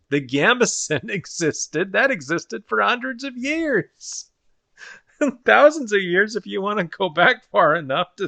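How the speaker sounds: laughing through words. Speaker chatting about barbarian armor in shows, laughing while talking. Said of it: "Sorry, I'm I'm laughing".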